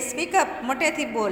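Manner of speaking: ordinary talk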